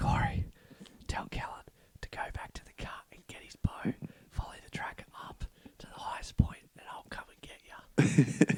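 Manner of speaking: quiet whispering. Retelling a phone call made close to the pigs: imitating own whisper. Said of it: "I'm there whispering in the phone".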